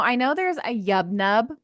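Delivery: ordinary talk, nothing marked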